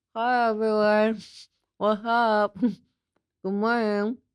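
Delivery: speech muffled by water held in mouth. Showing how speech sounds while trying not to spill a mouthful: talking with liquid in mouth. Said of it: "something in your mouth and you're trying not to spill it".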